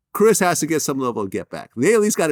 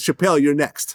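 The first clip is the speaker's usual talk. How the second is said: ordinary talk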